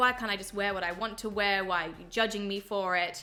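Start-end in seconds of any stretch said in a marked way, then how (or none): none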